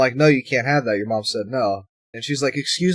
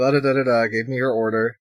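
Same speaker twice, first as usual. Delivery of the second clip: ordinary talk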